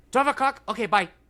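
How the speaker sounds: high-pitched salon lady voice. Retelling a phone call to book a haircut: imitating a Korean salon lady. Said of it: "these awesome, like, Korean ladies ... And she goes".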